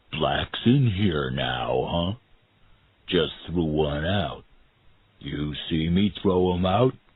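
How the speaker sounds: understated, restrained, simmering fury. Narrating, the reader voices someone who pulled the narrator inside: quiet voice. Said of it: "a quiet voice said".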